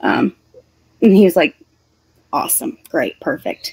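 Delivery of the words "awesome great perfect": play-acted, hushed, whispered, sarcastic approval. Retelling how he reacted to her not knowing Jillian Hall, imitating sarcastic praise.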